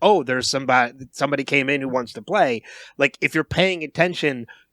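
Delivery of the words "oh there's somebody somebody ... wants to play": usual speaking voice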